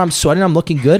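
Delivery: plain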